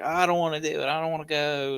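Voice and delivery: put-on high, loud, tearful pleading child crying. Retelling a kid's refusal to go to a softball game: imitating a crying child. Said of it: "started crying".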